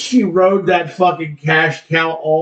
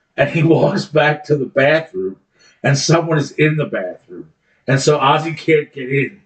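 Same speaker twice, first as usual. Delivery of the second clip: ordinary delivery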